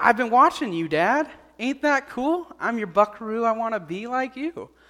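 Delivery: put-on young boy's voice.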